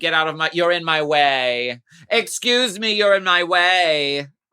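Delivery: loud, slow grocery-store lady voice. Acting out a contestant duck walking in her boat: imitating a lady in the grocery store. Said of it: "she's that lady in the grocery store".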